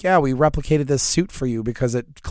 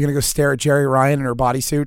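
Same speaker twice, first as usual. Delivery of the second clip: plain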